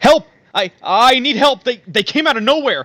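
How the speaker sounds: very high-pitched, frantic shouting. Speaker voices a voice heard at a fork in the forest, shouting for help. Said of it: "As it's shouting".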